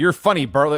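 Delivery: ordinary talk, nothing marked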